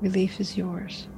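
hushed, quiet, softly spoken. A character answers a lost man who begs for relief: quiet voice. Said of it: "Can Arineal just quietly say".

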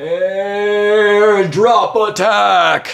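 distant, very high, very loud, booming battle cry. Narrating a fight scene, a character calls out from above, shouting from far away. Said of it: "you hear a voice shouting from far away".

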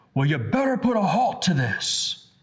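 thunderous, loud, booming voice with swooping pitch. Retelling what he said to them in the confessional, booming loud voice. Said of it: "with a booming loud voice".

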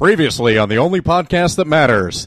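put-on announcer voice. Asked to do their best announcer voice to open the show: best announcer voice. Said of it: "Do best announcer voice".

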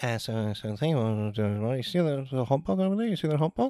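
soft, hushed, really weird mumbling.

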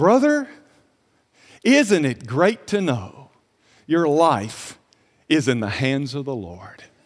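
perfectly peaceful, serene, very deep, assured voice. Retelling what a calm man said during a turbulent flight, imitating a perfectly peaceful tone. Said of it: "he's at perfect peace".

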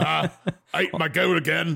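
put-on voice, pitched high, creaky and crackly. Joking about Thor getting his driver's license: put-on Thor voice. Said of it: "I don't know why that's his voice".

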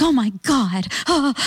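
frantic, panicky, high, drawn-out cry. Retelling how a woman reacted before eating, imitating a frantic woman. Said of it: "the way [name] imitates her is so on point".

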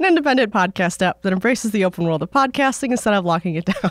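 ordinary talk

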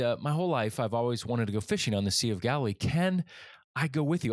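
usual speaking voice

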